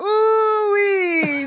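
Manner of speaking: shrill, very high, loud cartoony character squeal. Comparing cartoon voice actors with a friend, doing a Mr. Poopybutthole voice. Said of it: "Mr. Poopy Butthole, like he's like".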